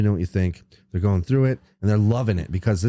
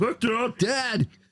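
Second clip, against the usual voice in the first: put-on puppet voice, much higher; 14 semitones higher, 4 dB quieter than usual. Speaker retells what a man told people at a bar: Muppet voice. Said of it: "abridged Muppet version?".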